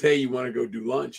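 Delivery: ordinary talk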